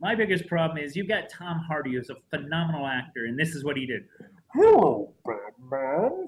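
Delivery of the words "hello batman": loud voice swinging pitch up and down. Complaining about an actor's movie performance, speaker mimics him: Tom Hardy impression, rising-falling. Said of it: "Everything I say sounds like this. I raise my voice, I lower my voice".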